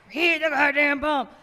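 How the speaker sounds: play-acted loud, high, distant drunk man's heckling. Speaker acts out a drunk man's disembodied voice, imitating a drunk man's voice. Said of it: "this like disembodied voice of this drunk man".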